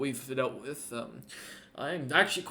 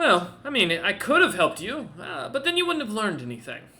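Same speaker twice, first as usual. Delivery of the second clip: high, loud, bouncy, swooping voice; 7 semitones higher, 5 dB louder than usual. Voicing Kaijin, who looks up at a player and answers: voicing Kaijin. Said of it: "And looks up at you and goes".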